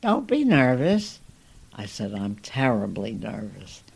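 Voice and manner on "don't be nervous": small, high, squeaky voice. Retelling what a woman squeaked at them, the speaker does: squeaky voice. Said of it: "she squeaks out".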